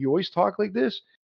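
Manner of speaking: light, playful, good-humored teasing. Retelling his greeting to her: imitating playful man. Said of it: "He's playful".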